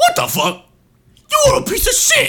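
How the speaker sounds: shrill, very high, furious angry yell. Doing a celebrity impression for others to guess: put-on celebrity impression, angry yelling. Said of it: "guess this celebrity impression".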